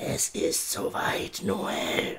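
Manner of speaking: very hushed, very soft, slow, drawn-out whisper. A voice speaks to a character watching an owl, whispered. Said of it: "flüsterte die Stimme".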